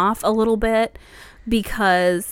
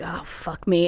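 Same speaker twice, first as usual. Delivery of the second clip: put-on fed-up, exasperated under-the-breath grumble; 3 semitones lower, 4 dB quieter than usual. Retelling a character's reaction in a film scene: imitating an exasperated eye-roll. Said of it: "rolls his eyes like".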